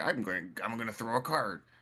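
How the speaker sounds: mocking, teasing send-up voice. Retelling how a player fought a golem, mocking Gambit impression. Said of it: "I'm making fun of Gambit".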